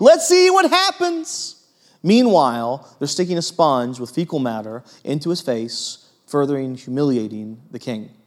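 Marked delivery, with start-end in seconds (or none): 0.0-1.5 high, mocking taunting tone. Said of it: "some are mocking him".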